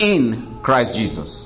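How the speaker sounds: in stressed hard, slow and stretched out.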